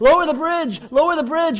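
put-on high, loud yell of a boy. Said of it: "he yells to his dad".

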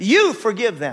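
mock very firm, commanding tone, allowing no argument. Retelling what the Lord told him while driving: imitating a firm command. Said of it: "He said it very firmly".

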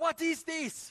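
raging, shrill, furious scream at full volume. Retelling how Louis screamed at him when he was fifteen, imitating Louis screaming. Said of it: "So he's screaming at me about this".

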